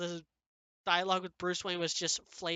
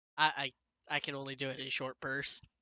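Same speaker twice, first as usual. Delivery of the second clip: ordinary talk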